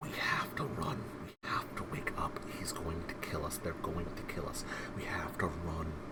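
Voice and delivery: quiet whispering voice. A game master voices a voice in the player's head: whisper. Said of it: "a whisper".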